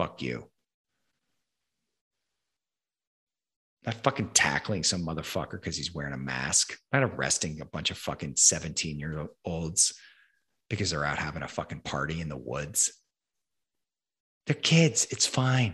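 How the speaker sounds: furious rant, swearing hard. Ranting to another speaker about safety and control: angry rant. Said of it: "I'm angry".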